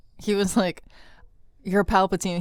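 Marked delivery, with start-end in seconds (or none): 1.6-2.4 put-on rapid rushed delivery, higher and louder. Retelling how a film line was delivered, imitating Adam Driver saying it quickly. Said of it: "saying it so quickly".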